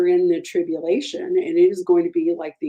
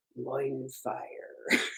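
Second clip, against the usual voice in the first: very quiet, gravelly TV narrator voice; 5 semitones lower, 13 dB quieter than usual. Quoting a TV narrator saying a phrase: Keith Morrison gravelly TV voice. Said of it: "Keith Morrison from Dateline in his gravelly T V voice say".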